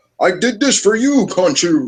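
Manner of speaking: high, swooping, big cartoon-hero voice. Imitating a game character's line, imitating Moon Knight as Saturday morning cartoon hero. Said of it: "he sounded like some Saturday morning cartoon hero".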